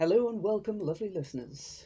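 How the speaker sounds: put-on, mock-solemn announcer delivery with gravitas. Opening the episode after being asked for a darker tone: put-on gravitas voice. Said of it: "very, very, very, uh, gravitas".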